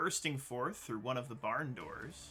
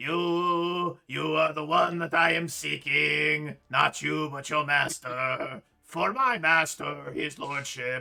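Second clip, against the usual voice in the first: booming slowly, stretching the first "you"; 3 semitones higher, 14 dB louder than usual. Narrating a game, the speaker voices a creature addressing a player: Cookie Monster voice. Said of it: "That was definitely Cookie Monster".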